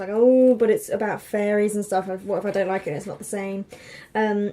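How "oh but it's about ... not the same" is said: ordinary talk, nothing marked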